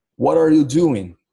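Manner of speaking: American accent with US English pronunciation. Teacher showing students how americans would say the phrase, american accent. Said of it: "usando o sotaque americano".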